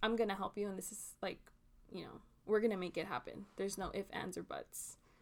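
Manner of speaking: play-acted, stern, firm, no-nonsense insistent tone. Describing a guest's helpful way of talking, imitating someone stern. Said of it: "you're very stern too".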